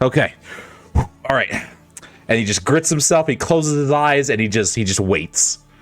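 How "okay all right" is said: hyped-up self-encouraging tone, higher. Voicing a character bracing to be punched in the face: hyping himself up. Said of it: "he's hyping himself, he's preparing himself".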